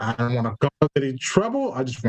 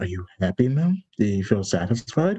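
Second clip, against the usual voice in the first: hushed, quiet whisper, lower pitch; 5 semitones lower than usual. Speaking in character so no one else hears: whispering quietly. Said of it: "So I whisper quietly so no one can hear".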